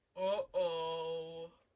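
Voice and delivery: low, loud dumb voice, stretched "oh". A player voices their character reacting to a scream, in a low, dumb-sounding voice. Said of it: "like in a very, like, low, dumb sounding voice".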